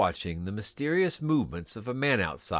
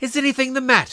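breathless, out of breath, much higher; 9 dB louder than usual. The old lady questions the visitor who was asked to call, breathless. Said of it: "she said breathlessly".

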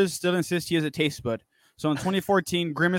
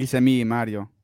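put-on Italian accent; 5 semitones lower than usual. Asked to let everyone hear his Mario, the speaker gives a Mario impression with accent. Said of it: "I went for Mario with an accent".

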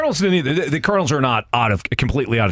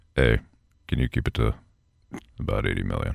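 very low, creaky, rough voice; 6 dB quieter than usual. Showing how the real coach would say it: Bill Belichick impression. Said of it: "Bill would have been like".

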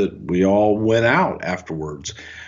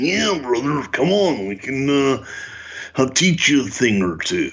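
impression, high-pitched growling voice. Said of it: "that Savage agreed".

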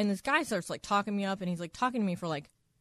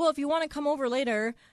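put-on Australian accent, higher; 6 semitones higher than usual. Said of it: "he had, like, an accent".

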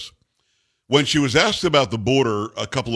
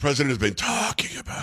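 soft, hushed mock whisper. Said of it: "why'd she have to whisper there".

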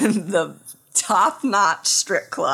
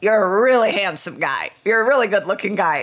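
usual speaking voice

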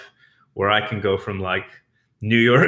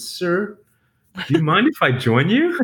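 mock respectful, courteous voice, a bit higher; 7 semitones higher than usual. A city boy retells what he said to a man spearing frogs, most respectful voice. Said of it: "in my most respectful voice".

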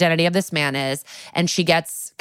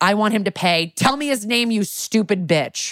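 put-on screamed outburst, higher; 3 semitones higher than usual. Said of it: "a full meltdown screaming at Jennifer".

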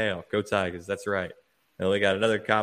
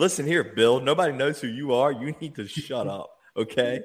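mock, mild, half-shouted scolding tone; 4 semitones higher than usual. Speaker recalls watching a football game, retelling screaming at the TV. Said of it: "I was screaming at my TV".

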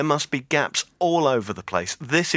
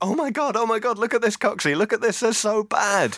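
mock shrieking, pitched way up, high screaming; 9 semitones higher than usual. Retelling watching the Bolton Sunderland tape in the office: imitating own screaming. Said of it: "just screaming".

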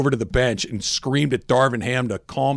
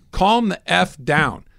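put-on yelling, slower; 5 semitones higher than usual. Retelling what a man screamed at his head coach: retelling a yell. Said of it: "He's yelling".

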